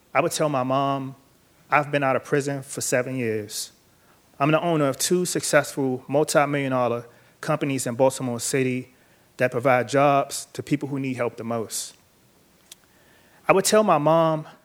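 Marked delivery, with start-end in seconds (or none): none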